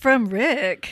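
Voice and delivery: put-on robot voice. Retelling a message read out by the speaker device: Alexa robot voice. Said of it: "with the robot voice".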